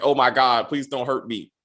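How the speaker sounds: put-on scared, frightened pleading. Recapping a TV scene where a younger man is choked: retelling a scared plea. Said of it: "this much younger man's like".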